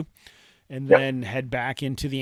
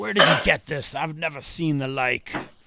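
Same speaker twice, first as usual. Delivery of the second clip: irritable, cross, angry voice; 2 semitones higher, 4 dB louder than usual. The narrator voices the tailor questioning the players, angry tailor voice. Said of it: "He seems like a very angry guy by the way he speaks".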